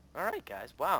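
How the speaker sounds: voice cracking and breaking on the words. Celebrating a win with a teammate, the speaker's voice cracks. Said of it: "Did you hear that voice crack?".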